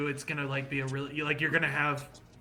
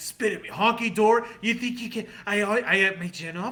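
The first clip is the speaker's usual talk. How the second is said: acted-out, mock-angry outburst; 6 semitones higher than usual. Retelling when a man ran from behind the bar into the group, mock-angry. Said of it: "I'm just like angrily being like".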